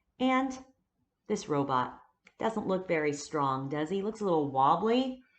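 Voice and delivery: ordinary talk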